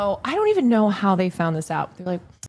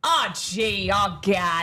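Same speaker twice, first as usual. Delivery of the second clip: put-on, over-the-top, extra woman voice. Showing how a woman who is extra does it, imitating a woman being extra. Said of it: "This is how she does".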